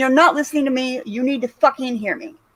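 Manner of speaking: ordinary talk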